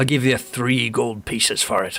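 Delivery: talking like a pirate. Voicing the blacksmith offering gold for the armor: pirate voice. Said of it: "I don't know why he talks like a pirate".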